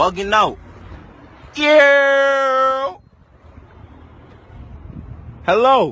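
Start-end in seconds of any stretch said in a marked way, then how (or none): 1.5-5.9 "yeah" pitched up and stretched out. At the Wendy's window, saying hello to the worker, screaming. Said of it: "Why are you screaming?".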